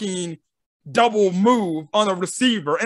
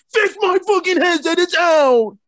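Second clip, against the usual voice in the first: put-on coach voice, high and screaming; 8 semitones higher than usual. Retelling how the coach's headset went out, imitating Matt Nagy screaming. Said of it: "he screams at some random-ass guy".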